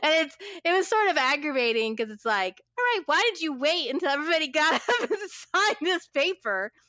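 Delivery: words spoken while laughing. Recounting an aggravating meeting where the top authority spoke last, laughing while talking. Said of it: "I'm laughing".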